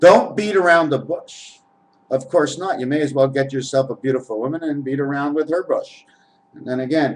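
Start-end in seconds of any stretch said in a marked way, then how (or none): none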